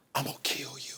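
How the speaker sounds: threatening whisper. Showing how to trick someone into a hug: whispering a threat. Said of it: "just whisper in his ear".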